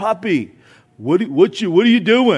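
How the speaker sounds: talking like a New Yorker. Speaker imitates his grandson's often-repeated question to him, in a New York accent. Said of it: "he kind of says it in a way like a New Yorker would".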